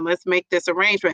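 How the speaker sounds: plain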